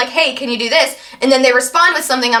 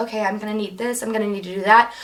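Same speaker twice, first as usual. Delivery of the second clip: mock muttering under breath, lower and quieter; 4 semitones lower, 8 dB quieter than usual. Showing how they talk to themselves: imitating talking under breath. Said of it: "I'll talk under my breath and I'll talk to myself like".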